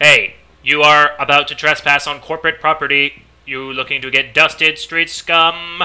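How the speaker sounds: very loud, flat, mechanical robot monotone. Voicing a guard warning a trespasser off corporate property, in a robot voice. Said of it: "He's got a robot voice anyway".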